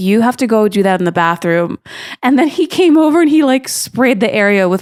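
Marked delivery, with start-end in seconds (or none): none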